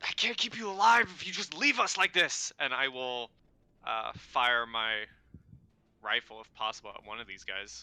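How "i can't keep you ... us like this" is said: high, loud shouted whisper pushed out hard. Calling to a distant ally down a zombie-filled hallway: whisper-shouting. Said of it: "whisper shout".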